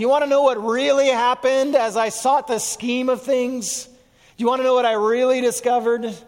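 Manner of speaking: mock bitter voice. Quote a man's personal account from across the table, imitating a bitter voice. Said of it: "you can almost hear the bitterness in his voice".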